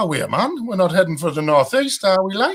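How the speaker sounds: bad put-on Geordie accent. Announcing that they are heading for the northeast, in a bad Geordie accent. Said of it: "she'll be ashamed of that accent you just did".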